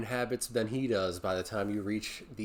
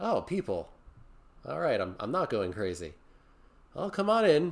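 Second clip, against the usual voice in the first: put-on little old gnomish man character voice; 2 semitones higher than usual. Narrating a scene, voicing the gnomish old man who opens the cabin door. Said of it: "you see this gnomish old man".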